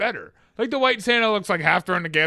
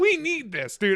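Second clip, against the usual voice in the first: put-on thrilled, high, excited yell; 9 semitones higher, 3 dB quieter than usual. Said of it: "And I'm yelling".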